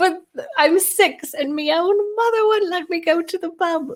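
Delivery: put-on very high little-girl voice with poor Irish accent. Retelling what a six-year-old girl said, bad irish accent. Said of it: "That's not a great accent".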